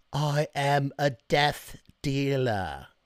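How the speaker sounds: terrible put-on British accent, dragged out very slowly. Doing an impression of the Underworld movies in a terrible Underworld British accent. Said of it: "my terrible imitation of a British accent".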